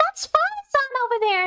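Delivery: voice cracking. Pointing out a character's location in a game, voice cracking. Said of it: "my freaking voice just cracked".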